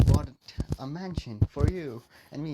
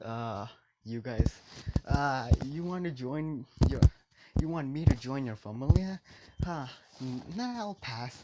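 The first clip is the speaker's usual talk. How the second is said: normal talking voice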